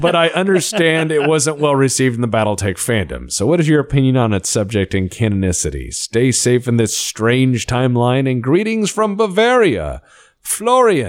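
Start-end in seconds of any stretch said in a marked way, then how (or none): none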